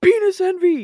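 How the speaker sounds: sudden, very high, very loud, shrill yell. Retelling a stranger who yelled in the speaker's ear: imitating a stranger yelling. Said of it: "he just yells in my ear".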